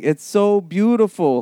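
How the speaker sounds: put-on yell, cried out, pitched high. Retelling how a friend in the water kept yelling: imitating a friend yelling. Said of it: "and he just yells".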